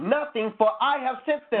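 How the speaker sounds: ordinary delivery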